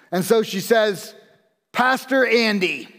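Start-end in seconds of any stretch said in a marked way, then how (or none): 1.7-2.8 mild, mock calling-out voice. Retelling how the gal at dinner addressed the pastor: imitating a real loud voice. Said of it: "in a real loud voice".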